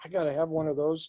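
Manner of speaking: ordinary delivery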